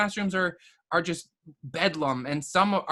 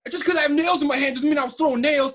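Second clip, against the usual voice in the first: mock aggressive angry screaming, high and loud; 8 semitones higher, 6 dB louder than usual. Speaker retells a kid getting in his face wanting to fight, imitating angry screaming. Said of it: "screaming at me like he wanted to fight".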